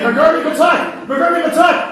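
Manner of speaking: very high, shrill, furious angry screaming. Retelling a father's Urdu lessons on Sundays: imitating father screaming.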